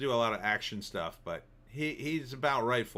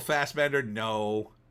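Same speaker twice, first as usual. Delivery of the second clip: ordinary talk, nothing marked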